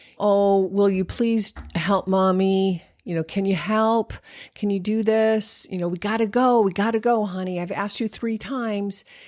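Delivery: weak, unconvincing pleading. Demonstrating how a parent might plead with a child to leave: unconvincing pleading. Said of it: "That isn't very convincing".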